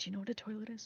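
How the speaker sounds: barely audible, very quiet half-whisper. Leaning in to a small creature to ask a question: half-whispering very quietly. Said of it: "whisper very quiet-, quietly".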